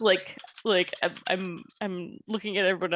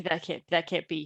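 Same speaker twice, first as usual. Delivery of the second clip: muttering quietly under breath. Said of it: "muttering under my breath".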